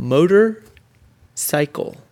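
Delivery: "motorcycle" slowly split into "motor" / "cycle". Showing the folks how to play Say It Fast, word split into parts. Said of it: "Say it fast".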